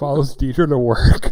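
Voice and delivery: mock creepy delivery. Recapping a show plot to another speaker: put-on creepy tone. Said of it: "the way you say that makes it sound really creepy".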